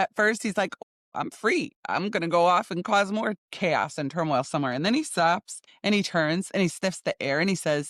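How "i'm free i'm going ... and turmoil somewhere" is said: ordinary talk, nothing marked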